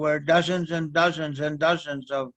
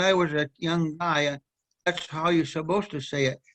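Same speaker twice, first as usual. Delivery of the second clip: plain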